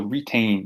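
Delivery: retain with stress on second syllable -tain. Going over the pronunciation of twelve words: stress on tain in retain. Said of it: "make sure that you are stressing the tain".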